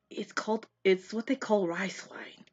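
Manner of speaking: hushed, soft, under-the-breath whisper. Game master voicing a character answering a player's question, whispering. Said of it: "And he like kind of like whispers".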